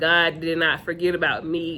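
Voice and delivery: ordinary talk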